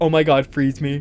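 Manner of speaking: ordinary talk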